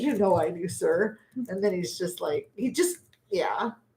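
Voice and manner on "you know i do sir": acted sardonic, knowing, dry sarcastic tone. Retelling how Mac answers his boss: imitating Mac's sarcastic reply. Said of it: "Or he'll say it like that".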